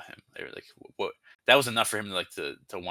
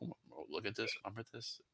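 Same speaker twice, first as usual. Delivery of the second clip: very quiet, barely audible, gossipy half-whisper; 15 dB quieter than usual. Imagining people gossiping about a boss, imitating people half-whispering.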